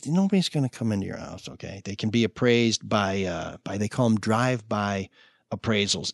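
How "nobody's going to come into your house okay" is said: hushed whisper, quieter and lower. Reassuring listeners worried about the coronavirus about appraisals: whispering. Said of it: "why did you whisper when you said".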